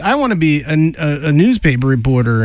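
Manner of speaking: ordinary talk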